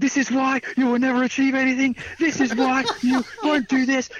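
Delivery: put-on very high-pitched, angry ranting outburst. Retelling a friend's reaction in an argument: imitating someone ranting angrily. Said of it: "And he just went crazy".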